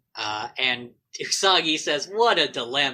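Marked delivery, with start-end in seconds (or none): 2.1-3.0 dry, sarcastic tone, acted out. Retelling a cartoon scene, quoting a character: retelling a line sarcastically. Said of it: "not as sarcastically as I made it sound".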